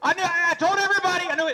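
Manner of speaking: put-on frantic, panicked scream, very high-pitched. Retelling a friend's panic on a dark ride: imitating Lee screaming. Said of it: "he's screaming".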